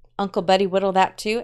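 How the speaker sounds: ordinary delivery, nothing marked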